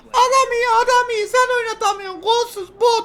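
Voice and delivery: very high, squeaky, smug mocking voice.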